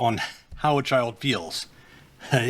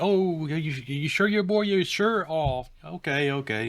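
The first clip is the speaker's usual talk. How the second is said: mock disappointment, poorly hidden; 3 semitones higher than usual. Imitating a parent asking her child if he's sure he's a boy: imitating a disappointed parent. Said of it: "she's all disappointed and she tries to hide it".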